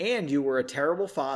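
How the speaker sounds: ordinary delivery, nothing marked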